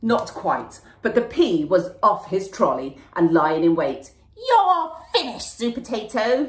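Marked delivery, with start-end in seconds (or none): 4.4-6.5 high, shrieking villain voice. Narrator reads the pea's line to supertato; shrieking. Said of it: "he shrieked".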